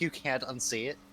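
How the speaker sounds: ordinary talk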